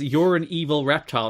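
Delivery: plain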